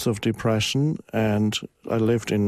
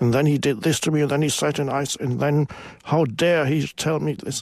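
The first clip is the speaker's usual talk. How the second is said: high, furious, angry complaining rant; 5 semitones higher than usual. Retelling a woman on the train talking to herself: imitating an angry complaining voice. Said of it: "in a very angry voice".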